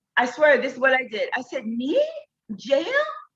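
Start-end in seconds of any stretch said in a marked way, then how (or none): 1.6-2.8 put-on aghast, shocked, panicked, disbelieving outburst. Retelling being told by an officer about jail, imitating own shocked panic. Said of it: "Just calm down, calm down, ma'am".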